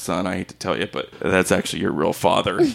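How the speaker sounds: mock muttered aside under the breath. Retelling what dad said under his breath while waving to a boy, retelling a mutter under breath. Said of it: "under his breath".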